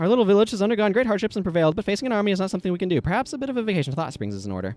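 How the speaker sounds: rushed, fast reading. Reading an in-game message aloud during an escape sequence; reading very quickly. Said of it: "I read that very quickly".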